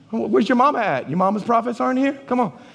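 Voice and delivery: put-on snide, teasing, sarcastic tone. Retelling a prophet taunting kings about their mama's prophets: sarcastic Elisha. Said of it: "he's so sarcastic".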